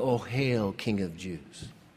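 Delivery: play-acted, low, slow, derisive jeering. Speaker retells how they bowed before Jesus, acting out mocking homage. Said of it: "they bowed down before him mockingly".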